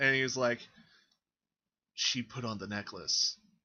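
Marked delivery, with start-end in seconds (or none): 1.9-3.4 put-on failed whisper, lower. Mimicking a character who thinks he's being quiet: imitating a failed whisper. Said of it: "he thinks he's being quiet with you".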